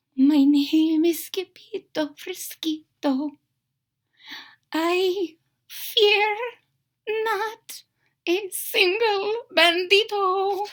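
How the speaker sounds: hushed, very soft, slow, high voice. Narrator reading a story: the hero faces the bandito, in a very soft voice. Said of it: "in a muy, muy soft voice".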